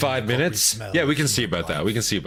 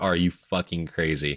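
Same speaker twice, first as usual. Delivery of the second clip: put-on flat deadpan tone; 4 semitones lower than usual. Reacting to a story, retelling a character's question: imitating a deadpan question. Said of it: "deadpan to his face".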